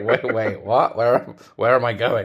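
panicked male voice. Retelling a story, acting out the man's words: imitating Fred. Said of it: "he's like".

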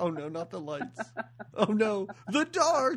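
play-acted, high, rising frightened cry with mounting alarm. Retelling the waitress panicking when the lights go out: imitating someone scared. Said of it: "she's so scared of the dark".

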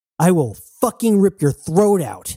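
enraged, furious, high-pitched yelled shout. A woman shouts a threat at a man who cannot hear her, shouting. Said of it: "shouted Jazz".

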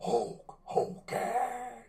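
very slow, high, drawn-out put-on voice.

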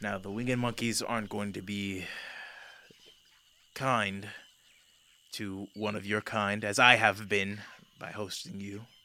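soft voice, words said on a sigh. Voicing a character warning that winged monkeys won't be kind: sighing. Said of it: "He kind of sighs and he goes".

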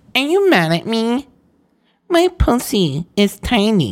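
very high, gross porn-style voice. Retelling what Jessica asked, imitating Jessica's porn-type voice. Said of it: "that gross porn type uh, voice".

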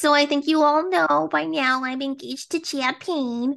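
slow, drawn-out, insufferable sketch-comedy way of talking. Retelling a camping episode engagement story, imitating her insufferable way of talking. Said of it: "The way she talks".

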